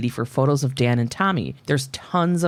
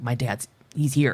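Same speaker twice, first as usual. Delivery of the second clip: put-on voice of a startled young boy. Retelling how a boy reacts on hearing his dad yell: imitating a startled child. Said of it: "he's startled".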